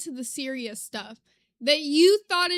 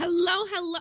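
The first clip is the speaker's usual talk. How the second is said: hoarse, scratchy, raspy voice; 3 semitones higher than usual. Greeting everybody at the very start: raspy voice. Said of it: "my voice was raspy starting off".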